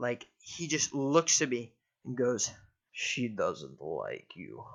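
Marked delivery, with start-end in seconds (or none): 2.9-4.6 put-on very low, soft, deepest Russian accent. Retelling what a huge man said while looking at him, in a deep Russian accent. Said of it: "in this deep, like almost like F P S Russia like Russian accent".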